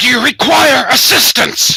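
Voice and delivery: very loud, very high, booming shout. Sardic advances closer, trying to communicate with it, in a booming voice. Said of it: "Are you doing the booming voice thing?".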